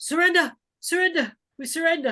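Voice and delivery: very high, screaming, screamed cry. Voicing a druid who screams out a surrender: druid screaming. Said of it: "You hear the druid scream out".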